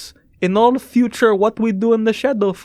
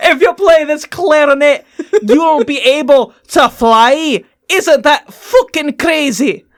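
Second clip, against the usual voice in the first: put-on brogue-accented voice; 5 semitones higher, 5 dB louder than usual. Showing off an enchanted clarinet, brogue accent. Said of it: "I'm losing my goddamn brogue".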